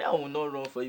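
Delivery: ordinary talk, nothing marked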